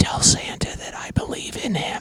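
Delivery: soft, breathy, hushed whisper. Speaker retells what a kid whispered to him, whispering. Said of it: "he whispers and he says".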